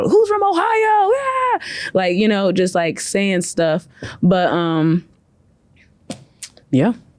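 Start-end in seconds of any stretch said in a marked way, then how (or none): 0.0-1.6 very high, slow calling out. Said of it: "here's me in the crowd".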